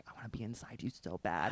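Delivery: close, soft, hushed whisper, very quiet. Recounting what he kept whispering while making out, imitating a whisper. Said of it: "kept like whispering like".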